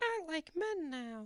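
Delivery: put-on very high, squeaky, soft, tiny cartoon-kid voice. Retelling what Ginger said about a werewolf bite, in a Ralph Wiggum impersonation. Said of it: "That was my Ralph Wiggum impersonation".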